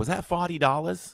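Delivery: put-on, thick Long Island accent. Describing how a parent talks, imitating mom's thick accent. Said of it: "My mom's the same way".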